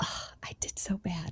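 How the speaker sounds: very hushed, slow, disappointed whisper. The speaker scolds themself over a mistake, in a put-on disappointed dad whisper. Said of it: "in that disappointed dad whisper".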